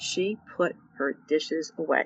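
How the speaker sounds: hushed, level, uninflected soft monotone. Speaker retells the girl's long-awaited answer: quoting her soft monotone. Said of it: "Very monotone, very soft".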